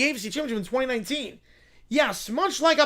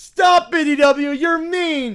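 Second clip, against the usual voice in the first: put-on child fake cry, much slower; 3 semitones higher, 8 dB louder than usual. In a parody scene, Caillou answers someone teasing him, Caillou fake crying. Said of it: "Caillou's gonna fake cry again".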